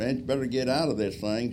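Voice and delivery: loud hollering. Retelling a belly landing, calling back to the man aboard, retelling a holler.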